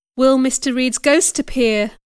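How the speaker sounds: ordinary delivery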